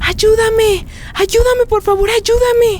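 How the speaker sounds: high, loud, desperate screaming at full voice.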